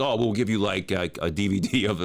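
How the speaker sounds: usual speaking voice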